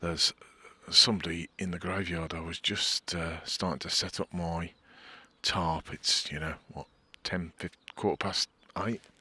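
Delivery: hushed, whispered voice. Setting up a tarp in a graveyard when someone else arrives; whispering. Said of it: "I'm going to have to whisper".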